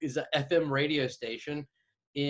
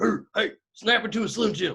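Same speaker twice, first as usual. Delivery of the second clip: pitched-up, pro-wrestler, promo-style voice; 6 semitones higher, 4 dB louder than usual. Imitating Alex Jones, who sounds like a wrestler: Alex Jones impression. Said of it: "He's like".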